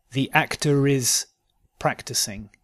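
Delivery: "actor is" said slow, linking R, split by pause.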